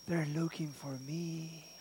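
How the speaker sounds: very quiet, hushed, barely-there half-whisper. Telling a story about a phone call, imitating a half-whisper. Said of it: "that whispering voice".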